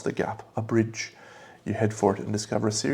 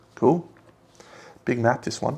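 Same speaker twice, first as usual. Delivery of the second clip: ordinary talk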